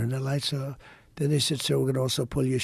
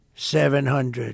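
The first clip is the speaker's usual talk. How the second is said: put-on computer voice, much louder; 6 dB louder than usual. Retelling a plane's landing, calling out altitude like the cockpit computer voice. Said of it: "It's a computer voice".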